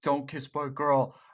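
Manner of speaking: usual speaking voice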